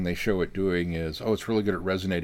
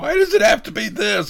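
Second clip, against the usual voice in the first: high, loud, raised voice that cracks; 13 semitones higher, 7 dB louder than usual. Recalling a moment of dialogue that struck you, imitating Tennant's voice cracking. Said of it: "when Tennant's voice cracked".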